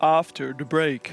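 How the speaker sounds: very deep, low bass-register voice. Showing how low the voice can go, in a very low bass voice. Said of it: "Or I can be very low".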